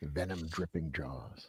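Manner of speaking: hushed, low horror-movie style voice. Host on a taglines segment repeats a phrase in a Vincent Price voice. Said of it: "in a Vincent Price voice".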